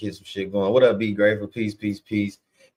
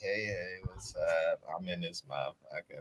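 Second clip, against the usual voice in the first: play-acted, hushed, very quiet, slow, sleepy worn-out drawl; 3 semitones lower, 14 dB quieter than usual. Showing the other speaker how their voice sounded earlier, imitating someone sounding tired. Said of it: "Like you was tired as hell or something".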